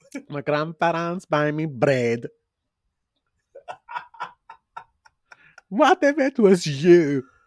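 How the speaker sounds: English spoken with a put-on Swedish accent. Talking with a listener who says they sound Swedish, put-on Swedish accent. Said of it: "You sound like [name] doing a Swedish accent".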